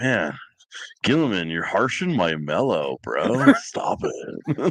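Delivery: laid-back surfer bro voice. Imagining Leman Russ telling off Gilliman: Leman Russ as surfer bro. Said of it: "like a surfer bro".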